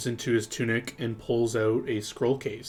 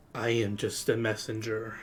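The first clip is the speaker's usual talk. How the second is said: soft, hushed half-whisper; 3 dB quieter than usual. Voicing a figure who answers a player's question: half-whispering. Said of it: "in a whisper".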